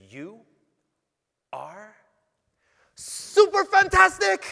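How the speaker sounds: play-acted, very loud, very high, swooping joyful burst. Retelling what a woman at a window said: imitating a burst of joy. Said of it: "with this burst of life and love".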